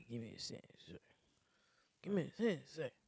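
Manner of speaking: mumbling words as if talking in sleep. Retelling how the other speaker talked in their sleep: imitating sleep mumbling. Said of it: "you were mumbling what you were saying".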